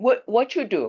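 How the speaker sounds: heavy Chinese accent, high-pitched and slow.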